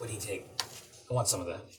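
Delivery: soft, hushed in-character whisper. Voicing a character who leans over to another character: whispering in character. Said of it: "whispers over to you like".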